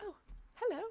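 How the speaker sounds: very high, small, tiny little voice. Voicing a glowing creature greeting a player: small voice. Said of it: "a small voice begins to speak to you".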